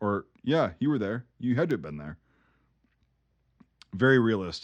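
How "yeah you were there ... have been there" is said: mock flat deadpan delivery. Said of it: "It's just deadpan of like".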